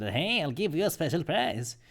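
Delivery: high-pitched toy talking-doll voice. Explaining a seller's trick, imitating one of the talking dolls. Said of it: "have one of the dolls say".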